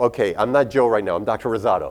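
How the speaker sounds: ordinary talk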